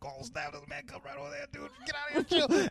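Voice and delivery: very high, startled wolf-pack voices. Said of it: "And they're like".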